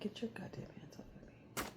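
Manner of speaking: hushed, breathy, whispered cat voice. Voicing the cat Kit Kat while the niece touches him: Kit Kat voice. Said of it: "He's like".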